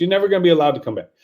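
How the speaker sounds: rapid-fire, rushed delivery, words blurred together. Practicing how to deliver a line, just saying it real fast: very fast. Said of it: "just say it real fast".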